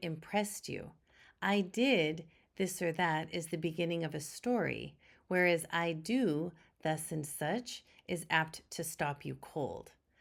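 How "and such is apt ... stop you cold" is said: normal talking voice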